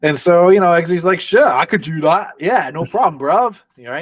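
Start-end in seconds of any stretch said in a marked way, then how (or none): 1.2-4.0 put-on English accent. Retelling a man's reply to a listener, in a put-on English accent. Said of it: "you know your uh your his accent is getting better".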